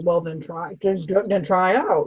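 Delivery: snide, sarcastic tone. Retelling how a character answered about trying out: imitating a sarcastic remark.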